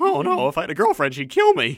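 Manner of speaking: high, loud, swooping cartoon character voice. Retelling a lip-synced dance skit line: Simpsons character voice. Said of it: "I did him like the guy from The Simpsons".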